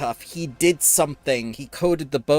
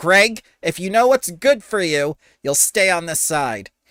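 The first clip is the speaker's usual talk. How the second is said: loud, pitched-up calling out in a character voice; 5 semitones higher, 5 dB louder than usual. Voicing a fence calling out a warning: calling out in character. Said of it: "the fence just calls out".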